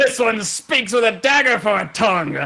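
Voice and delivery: high, loud, laughing, boastful champion voice.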